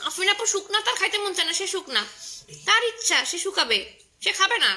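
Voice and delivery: angry voice.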